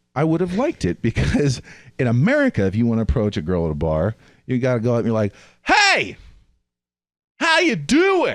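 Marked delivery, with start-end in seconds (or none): 5.6-8.3 very high, swooping, slow, drawn-out shrill yell. Describing approaching a girl at a loud bar, shouting a greeting. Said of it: "Because it's loud".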